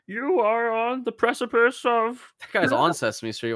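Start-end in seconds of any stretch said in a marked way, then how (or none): 0.1-2.2 mad voice, very high pitched and drawn out. Continuing the bit as Jordan Peterson ranting at a kids' show: Jordan Peterson impression. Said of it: "Why is he so mad?".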